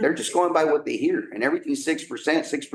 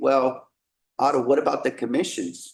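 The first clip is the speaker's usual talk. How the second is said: plain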